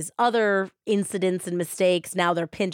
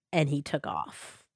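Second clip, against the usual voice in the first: ordinary delivery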